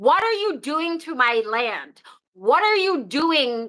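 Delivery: heated, angry, indignant, accusing voice. Retelling own past words in a conversation: reenacting speaking loudly in anger. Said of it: "I hear myself speaking this loudly".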